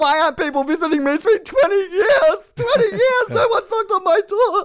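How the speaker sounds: very high, weepy, self-pitying crying whine. Acting out how he could whinge on the radio about being a victim: mock whinge. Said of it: "You sound like that woman off the Titanic".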